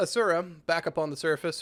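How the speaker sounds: ordinary delivery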